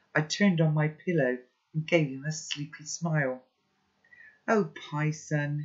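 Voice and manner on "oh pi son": murmured, close to tears, just after crying. A man who has been crying murmurs to the boy waking in bed. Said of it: "he murmured".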